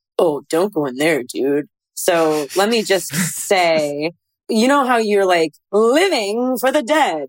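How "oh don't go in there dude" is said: put-on dopey cartoon teenager voice. The show's narrator demonstrates how different their narration sounds in tone, almost like Butt-Head. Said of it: "I almost sound like Butthead from Beavis and Butthead".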